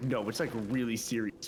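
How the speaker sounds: ordinary talk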